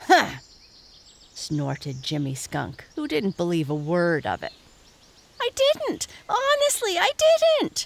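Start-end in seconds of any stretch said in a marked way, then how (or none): 5.4-7.9 very high, loud, insistent. Narrator reading Reddy protesting to a doubting Jimmy Skunk. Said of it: "protested Reddy".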